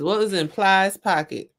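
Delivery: plain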